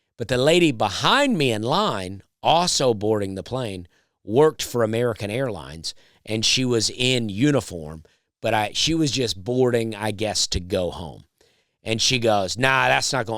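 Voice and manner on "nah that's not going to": put-on rude tone. Retelling what the lady behind in line said: imitating a rude tone. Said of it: "she said in a real rude tone".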